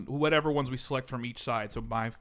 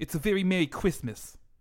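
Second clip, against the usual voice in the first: higher pitch, lisped s sounds, including "Christmas"; 7 semitones higher, 4 dB louder than usual. Naming a Christmas punch drink in a Mike Tyson lisp impression. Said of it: "I'm making fun of Mike Tyson".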